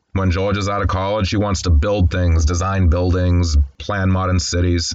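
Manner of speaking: usual speaking voice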